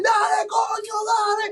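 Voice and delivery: very high cheering scream, coño drawn out. Retelling how a movie theater audience screamed: imitating a screaming crowd. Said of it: "it was just screaming".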